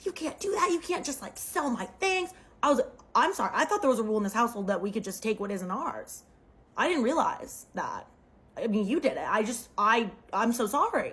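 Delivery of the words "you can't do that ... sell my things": high-pitched, play-acted, outraged screaming and yelling. Retelling what he screamed at the speaker, imitating someone screaming. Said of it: "like screaming".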